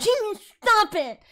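irritated, angry outburst. Quoting the man who kicked you in the head when you tickled his feet, retelling a yell. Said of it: "he yelled at me".

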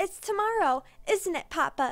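put-on high, loud, squealing child's voice. Clara runs to her papa by the nursery fire and asks him: squealing. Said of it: "she squealed".

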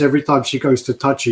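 normal talking voice

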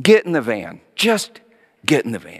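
put-on frustrated tone. Retelling ordering the kids into the van, imitating own frustrated past order. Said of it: "Totally frustrated, I said".

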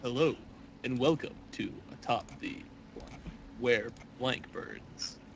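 hushed, breathy, put-on seductive whisper. Opening the show after telling everyone to shut up, in a put-on sexy voice. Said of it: "What was that supposed to be?".

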